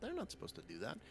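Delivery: high, soft, distracted muttering to herself.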